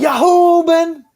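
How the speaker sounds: put-on, very high, loud, angry yell. Imitating how another speaker sounded when he got mad: imitating someone getting mad. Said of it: "what you sounded like in that one where you got mad".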